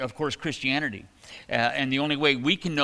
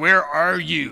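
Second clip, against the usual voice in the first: really angry, loud, rough, harsh voice; 2 semitones higher, 7 dB louder than usual. Acting out a common portrayal of him calling through the garden, really angry voice. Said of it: "he's got this really angry voice like".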